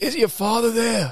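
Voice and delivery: mob-boss voice, pitched way up. Imitating the grandfather calling and speaking to the grandchild who answers the phone, in a Godfather voice. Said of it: "the Godfather like voice".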